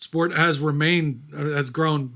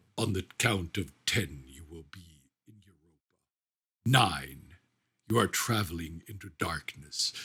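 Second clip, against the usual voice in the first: very low, deep voice, dropped way down; 10 semitones lower, 10 dB quieter than usual. Retelling a film's opening narration: Max von Sydow deep voice. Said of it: "Max von Sydow's amazing deep voice comes in, and he goes like".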